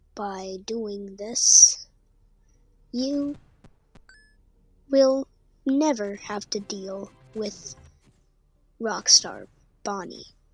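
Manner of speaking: talking slowly, unhurried pace. Giving step-by-step instructions to listeners, talking slowly. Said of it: "Sorry for talking slow".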